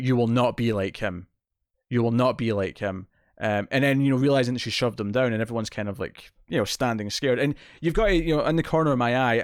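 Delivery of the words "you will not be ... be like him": ordinary delivery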